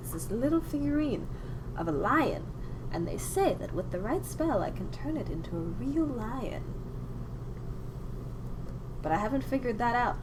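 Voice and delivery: soft, hushed, murmured put-on voice.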